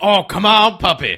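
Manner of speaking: very loud, high, slow, drawn-out cheer. Retelling a movie scene, imitating the shop owner's voiceover. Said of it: "He's just like".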